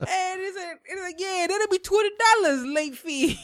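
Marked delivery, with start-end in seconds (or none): 1.2-3.4 put-on Italian accent, much higher pitched. Retelling a funny encounter, the speaker quotes a man's reply in an Italian accent. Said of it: "they all had like Italian accents".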